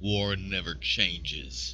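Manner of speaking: put-on not-so-good American accent. Speaker quoting a line, admitting the accent isn't great: not-so-good american accent. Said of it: "I can't do the American accent so well".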